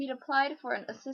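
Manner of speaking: ordinary delivery, nothing marked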